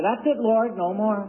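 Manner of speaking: high, huffy tone of giving up.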